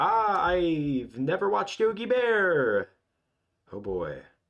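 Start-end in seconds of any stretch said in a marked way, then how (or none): 0.0-2.9 high, slow, drawn-out exaggerated exclamation. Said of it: "and I'm like".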